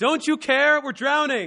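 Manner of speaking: put-on terrified shouting, very loud and high. Speaker retelling the men in the boat crying out to Christ, acting out scared, panicked cries. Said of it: "They were actually scared".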